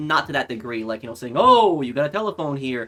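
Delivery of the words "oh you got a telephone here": put-on old-fashioned, pushy, emphatic voice, words stressed. Describing how agents used to talk, the speaker demonstrates a deeper, emphatic agent voice. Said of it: "emphasize things and just you know use that deeper voice".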